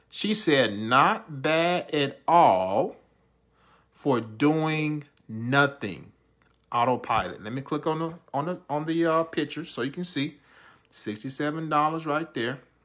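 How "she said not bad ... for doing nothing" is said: much slower, unhurried reading. Reading out a quoted comment for viewers, reading slowly. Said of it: "Let me read this last part slow".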